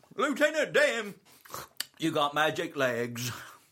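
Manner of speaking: high, swooping shouted holler. Told to shout a line in a Forrest Gump voice, the speaker obliges. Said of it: "in your Forrest Gump voice".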